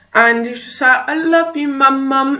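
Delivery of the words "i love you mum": put-on quiet, sweet voice, much higher and slower. Mother retelling her son calling up the stairs, imitating Freddie's sweet little voice. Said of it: "in the quietest, sweetest little voice ever".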